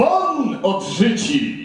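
deep booming preacher shout.

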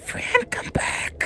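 hushed whisper. Retelling calling after someone who had gone away, whispering. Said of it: "And here I was whispering".

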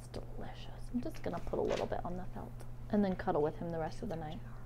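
soft, unvoiced whisper.

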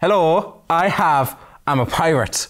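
bad put-on Dutch pirate accent. Streamer switching to a Dutch accent to introduce a pirate, bad Dutch accent. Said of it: "So, Dutch accent".

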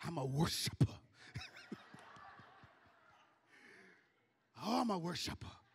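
weird put-on whisper. Imitating how they talk when that music plays, weird put-on whisper. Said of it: "they talk with that weird voice, that whisper".

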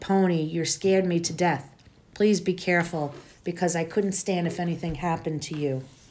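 ordinary delivery, nothing marked

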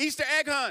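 high, loud burst of energy, enthusiastic.

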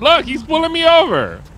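loud, shrill yell, very high. A driver being pulled over, to the passenger in the car: yelling. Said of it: "Who you yelling at?".

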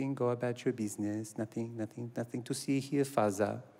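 put-on German-sounding accent. Playing the son answering his father, German accent. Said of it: "I'm sounding German now".

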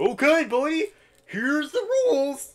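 squeaky, very high, loud, slow, drawn-out cartoon voice. Reading a game character's race rules aloud: Doofy the Dragon voice. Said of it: "You sound like Doofy the Dragon".

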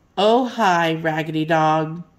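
not very friendly voice. Narrating a story, one character greets the dog who wants to play: not very friendly voice. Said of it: "in a not very friendly voice".

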